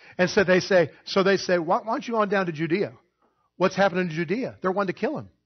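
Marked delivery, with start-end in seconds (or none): 1.6-3.0 mock sarcastic taunt, higher. Retelling what the brothers say: imitating sarcastic brothers. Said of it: "They're being sarcastic".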